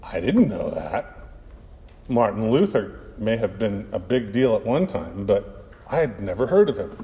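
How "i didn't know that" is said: low, abashed, sheepish. The narrator answers the mother's correction about Martin Luther, sheepish. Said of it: "I said sheepishly".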